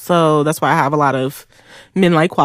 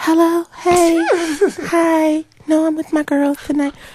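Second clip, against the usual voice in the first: put-on sugary, sweet baby talk, very high-pitched; 11 semitones higher than usual. Mocking a friend who answers a phone call, imitating a sweet baby voice. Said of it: "I talk like this all day".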